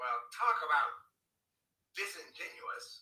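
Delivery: sassy, drawn out. Calling out someone who complained, sassy voice. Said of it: "That's my sassy voice".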